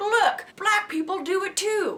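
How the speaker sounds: put-on Southern accent. Mocking what others would say about the killer: put-on southern accent. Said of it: "Southern voice yet again".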